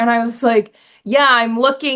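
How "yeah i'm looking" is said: imitated voice getting louder. Retelling answering a shop worker's question again, retelling getting louder. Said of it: "my voice is getting louder".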